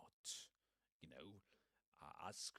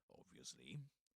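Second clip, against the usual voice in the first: pitch climbs at the end of "obviously"; 7 semitones lower than usual. Pointing out intonation patterns in a sentence, rising tone on obviously. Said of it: "Rising intonation".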